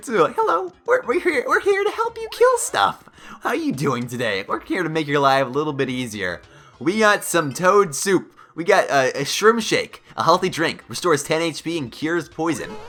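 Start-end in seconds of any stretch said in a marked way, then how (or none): 0.4-6.4 cute, eager, sing-song, swooping little helper voice. Playing a game, voicing the tiny helpers that follow the player: voicing the cute Mini Marios. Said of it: "they're actually kinda cute".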